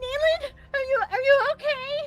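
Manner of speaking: very high-pitched, loud shouting. Picking up a tiny fellow character and calling to her: shouting. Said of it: "I'm shouting it at you".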